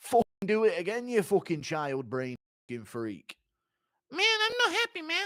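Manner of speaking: high fighter voice, pitch swinging widely, staying high. You act out a fighter knocking over Moreno's Legos, as a Tom Aspinall impression. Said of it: "impression of Aspinall".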